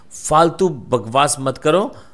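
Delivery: ordinary delivery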